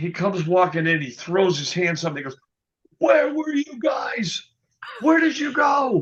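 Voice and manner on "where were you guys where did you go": mock, very high hollering shout. Retelling how the ticket contact came in the next day: imitating someone yelling. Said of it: "he yells".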